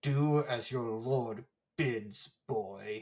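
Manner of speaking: words forced very slowly through clenched teeth. Reading a lord's brother's reply to a boy aloud: through gritted teeth. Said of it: "Through gritted teeth".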